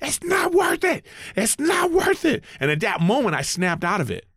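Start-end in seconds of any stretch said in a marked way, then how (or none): 0.0-2.4 very high-pitched, shrill shouting. Retelling how a fellow comic grabbed him from behind, retelling a yell. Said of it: "he yells in my ear".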